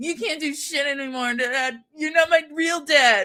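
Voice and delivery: high, whiny mock scolding tone. Recapping a story, the speaker voices Hollis popping off at his uncle: mock-whiny Hollis voice. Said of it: "I don't know why I'm making him whiny".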